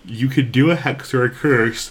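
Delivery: words half-yawned, talking through a yawn. Speaker explaining to podcast co-hosts, talking through a yawn. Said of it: "you're yawn talking".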